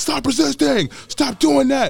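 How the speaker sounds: mock screaming, very high-pitched, very loud. Retelling an arrest, speaker quotes the cops at a running suspect, retelling cops screaming. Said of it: "they're like screaming".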